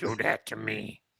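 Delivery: rough, angry, growling sinister alien sage voice. Objecting to being put back in the corner, angry dark-side Yoda voice. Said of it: "very angry, dark side-ish kind of Yoda".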